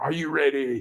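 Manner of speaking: solid, commanding drill sergeant voice. Retelling exercises done with infants: imitating own drill sergeant voice. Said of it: "my drill sergeant voice".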